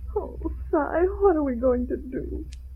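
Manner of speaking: weeping, tearful crying voice. Emma, crying over their condemned house, turns to cy, crying. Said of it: "I'm crying".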